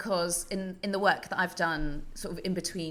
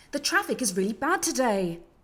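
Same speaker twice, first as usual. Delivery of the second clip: slow, mildly concerned news bulletin voice; 7 semitones higher, 6 dB louder than usual. Showing how a bulletin sounds when never finishing a sentence: mildly concerned news bulletin voice. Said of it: "finish a sentence without finishing a sentence".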